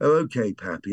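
sort of refined, pleasant, nice, elegant voice. Recalling a car ride, the grandfather quotes his granddaughter Grace in a nice elegant voice. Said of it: "in a rather sort of nice, sort of elegant voice".

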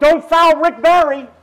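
high, very loud, full-throated shout. Retelling yelling at the Knicks about a player: imitating own past yelling. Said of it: "I'm yelling at the Knicks, going".

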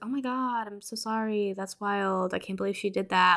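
put-on one-tone delivery. Retelling Rose's apology to Chris, which doesn't seem genuine, imitating a flat monotone. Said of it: "it's very just kind of one tone".

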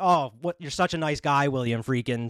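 normal talking voice

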